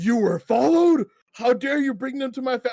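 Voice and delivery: mock angry, high, pissed-off outburst, cut off. Retelling a cutscene where the old orc confronts the rogue: imitating a pissed-off orc. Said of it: "he's all pissed off".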